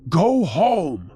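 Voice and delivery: loud shout with a cracking voice. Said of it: "I just shouted out".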